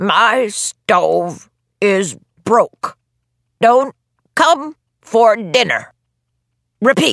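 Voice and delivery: slow, unhurried, hoarse voice. An old man gives a message for a girl to repeat, slow, hoarse voice. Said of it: "said in a slow, hoarse voice".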